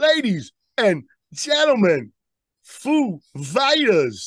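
very slow, deliberate, dragged out word by word. Showing how the actor would say the intro: Christopher Walken impression. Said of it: "he'd be like this".

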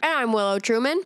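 speaking with mouth full, chewing. A co-host gives their name in the show intro, talking with a green bean in mouth. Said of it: "Are you really doing that with a goddamn green bean in your mouth?".

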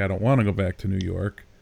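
plain

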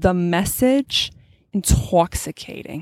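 put-on Long Island accent. Quote a woman who came up to a sister after her talk, in an attempted Long Island accent. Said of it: "I'm going to try to attempt the accent".

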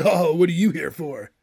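stock 90s sitcom surfer dude voice. Describing a character actor's role on a sitcom, 90s sitcom surfer dude voice. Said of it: "he does that typical surfer dude kind of voice".

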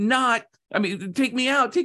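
put-on crying, pleading. Telling a parable of being put back in the oven, acting out crying and begging. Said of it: "I'm just crying, begging and pleading".

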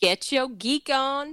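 very slow, showy delivery. Delivering a sign-off catchphrase on cue when prompted: performed catchphrase. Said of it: "Mamba, hit him with the catchphrase".

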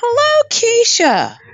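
very high, effervescent, fizzing, bubbly voice. Greeting the other speaker at the start: more effervescent. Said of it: "a little more effervescent".

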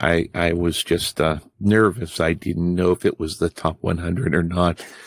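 talking small, quiet and soft-spoken. Explaining being nervous to another speaker: talking softly. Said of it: "Why are you talking so soft?".

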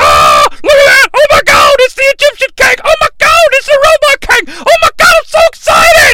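put-on very high, overly enthusiastic, excited gushing shout. Retelling a movie scene, imitating overly enthusiastic Kang. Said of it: "overly enthusiastic pointing Kang".

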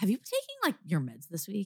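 tactless, prodding, swooping sing-song tone. Retelling what Scott asked while the speaker felt anxious, imitating Scott's tone. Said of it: "In that tone".

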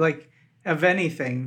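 ordinary talk

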